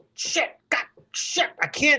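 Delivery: mock exasperated swearing, high-pitched, frustrated. Retelling struggling with a jacket during a quick change, frustrated cursing. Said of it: "you're like".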